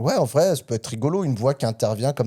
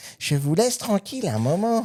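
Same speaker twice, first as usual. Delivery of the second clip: pitched-up toy voice; 6 semitones higher than usual. Imagining a child alone at night hearing the voice: imitating the product's voice. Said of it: "tu le fais vachement bien".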